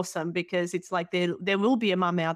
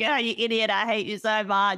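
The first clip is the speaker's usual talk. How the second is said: put-on small voice, higher; 3 semitones higher than usual. Retelling what was said to a husband in the hallway: little voice. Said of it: "making a little voice".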